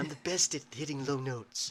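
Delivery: put-on boastful politician voice. Joking about hitting low notes: Donald Trump impression. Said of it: "I can do a decent impression of Trump".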